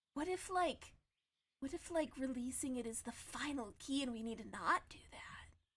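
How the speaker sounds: soft, hushed, secretive whisper. Game master voicing a woman who leans in to a player: whispering. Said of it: "she kind of whispers to you and she goes".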